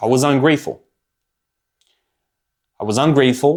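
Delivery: voice catching, choked up with emotion. Speaker reflects on the past while talking, getting emotional. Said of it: "I'm getting emotional".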